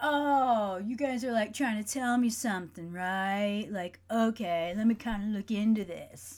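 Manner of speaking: put-on surfer dude voice with drawn-out "oh". Recounting a reply to their spiritual team, in a surfer dude voice. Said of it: "I don't know why I have to sound like a surfer dude".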